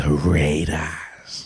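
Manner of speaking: creepy whispery wizard voice. Reading out the Raiders to a podcast co-host, in a creepy whispery wizard voice. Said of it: "creepy, whispery wizard voice?".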